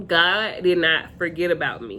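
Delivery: ordinary talk, nothing marked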